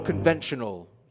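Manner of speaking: heavy stress leaning hard on the word conventional. A doctor answering a patient's question about surgery, stressing 'conventional'. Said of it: "You stressed the word conventional there".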